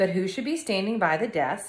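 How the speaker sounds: ordinary delivery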